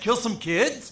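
put-on question-like rising intonation at the end on kids. Explaining he phrased his earlier line as a question, rising on kids. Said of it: "but I said it as a question".

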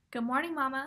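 plain

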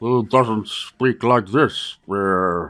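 terrible voice, very low, slow and dragged out. Describing a game character, doing a terrible Zoidberg impression. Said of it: "That's a terrible Zoidberg impression".

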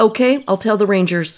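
ordinary delivery

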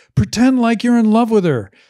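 shrill, very loud, high screaming voice. Act out a director instructing his actors from a trailer, imitating someone screaming over a megaphone. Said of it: "he was screaming that on a megaphone".

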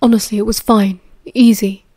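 ordinary delivery

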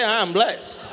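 put-on American accent. Showing the congregation how to say the line: American accent. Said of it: "You need to say it like an American".

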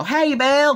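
put-on high-pitched Western US accent. Retelling Patty greeting Bill in a scene, Western-like accent. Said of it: "In a Western-like accent".

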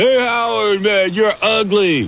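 high, slow mock yelling voice. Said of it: "some guy yells out".

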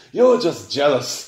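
said with a laugh. Henry to Gordon, who scoffed at pulling the circus, laughing. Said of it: "laughed Henry".

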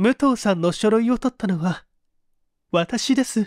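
quavering, unsteady voice. A woman, led into Noguchi's study, speaks to him in a trembling voice. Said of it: "声を震わせていった".

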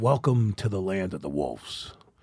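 breathy voice, close to the ear. Speaker retells the captain half-whispering into the speaker's ear, retelling a half-whisper. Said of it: "Then he whispers into my ear".

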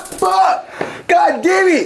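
high, loud pained screaming.

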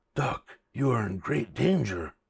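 soft, hushed half-whisper under the breath. Bear speaks to Duck after she opens the door, half-whispered. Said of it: "whispered Bear".

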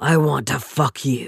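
growled out huskily. Narrator reads a man's line to a woman, in a husky growl. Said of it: "escaping my mouth in a husky growl".

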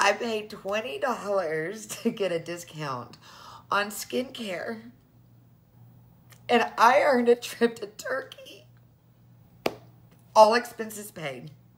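tearful, emotional. Speaker talking to viewers after saying she can't stop crying, tearful and emotional. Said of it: "I've cried".

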